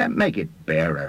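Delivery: ordinary delivery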